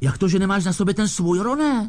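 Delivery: high-pitched, scandalized, affronted, indignant voice. Narrator reading one character's question to another: indignant. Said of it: "Zeptal se pohoršeně George".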